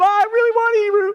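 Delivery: put-on fit-throwing voice. Retelling the daughter insisting to her father: imitating someone throwing a fit. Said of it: "'cause she throws a fit".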